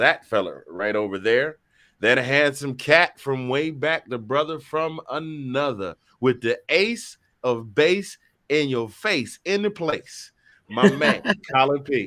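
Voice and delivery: slow, deliberate delivery. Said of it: "I gotta say it slow".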